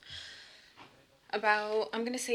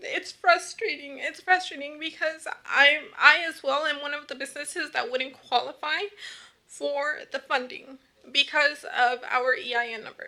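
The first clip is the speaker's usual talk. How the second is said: high, loud, emotionally strained voice. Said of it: "very emotional".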